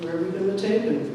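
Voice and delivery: ordinary talk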